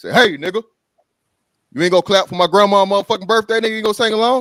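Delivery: loud, high, aggressive confrontational tone. Retelling a man getting up at a restaurant birthday: imitating an aggressive man. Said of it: "He get aggressive".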